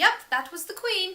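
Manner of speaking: exaggerated put-on British accent. Retelling what a staff member said, in a really bad British accent. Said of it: "I'm gonna do this in a really bad British accent".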